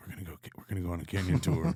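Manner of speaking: hushed, secretive, conspiratorial half-whisper. Retelling inviting friends on a canyon tour: imitating own past half-whisper. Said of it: "come up and whisper them and be like".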